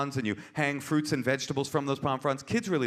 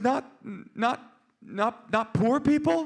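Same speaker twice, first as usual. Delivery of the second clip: put-on little child voice, higher; 9 semitones higher than usual. Retelling what a four-year-old daughter said at dinner: imitating four-year-old daughter. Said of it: "little four-year-old eyes".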